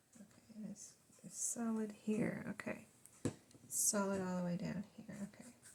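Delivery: soft, quiet talk under the breath. Checking glued edges while working, talking quietly. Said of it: "I'm talking quiet".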